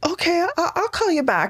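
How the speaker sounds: very high, shocked, stammering voice, swooping pitch. Retelling the real estate agent's stunned reply on a phone call: imitating a higher voice. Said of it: "he said it with a higher voice".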